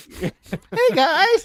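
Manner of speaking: very high, excited, thrilled voice. Imitating a wrestler's mocking greeting: high excited voice imitating Chris Jericho. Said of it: "go into an upper register of your voice".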